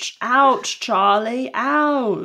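high, very slow, drawn-out "ouch" each time. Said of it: "She sounded exactly like".

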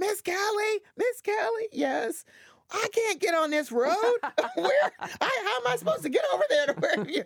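mock, shrill, pitched-way-up screaming. Retelling a call from a lost truck driver: imitating someone screaming. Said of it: "screaming at me".

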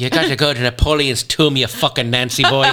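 put-on Irish accent throughout. Retelling a guide's words after being asked: irish accent. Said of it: "Say it in an Irish accent".

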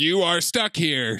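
machine-like, mechanical computer robot voice. Narrating a scene, the speaker voices a robot in a robot voice. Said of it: "Robot voice says".

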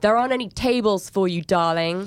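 mock yelling voice. Asking for a table for one, the speaker imitates a man yelling at them. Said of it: "this very obnoxious middle-aged American man just yelled".

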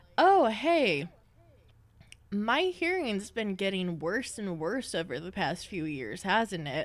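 ordinary delivery

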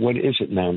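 ordinary talk, nothing marked

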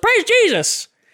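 put-on very high, heavily laid-on southern accent. Retelling what a super southern man exclaimed, in a super southern Mater-like voice. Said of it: "super southern".

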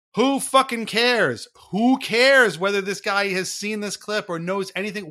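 furious ranting yell. Recounting yelling at a pre-recorded speaker on screen, retelling their own yelling. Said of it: "I'm yelling".

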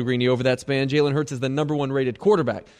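usual speaking voice

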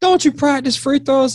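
high-pitched mock heckling tone.

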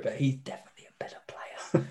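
soft whispered aside. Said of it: "I'm gonna whisper it".

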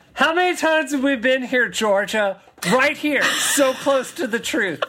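sarcastic line reading. Reading aloud a line from a fan-written document: sarcastic reading. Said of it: "I heard the sarcasm".

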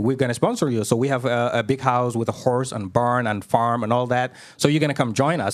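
usual speaking voice

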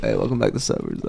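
swagger vocal fry voice. Asked to do a swag vocal fry voice for the introduction: swagger vocal fry voice. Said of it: "Like the swagger".

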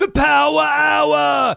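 put-on raspy, very high scream, "hour" drawn long. Retelling how people call out around the building: imitating people screaming. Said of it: "Scre-, like, all around the building".

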